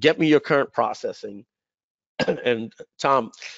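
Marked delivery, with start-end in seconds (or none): none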